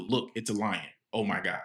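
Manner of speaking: ordinary talk, nothing marked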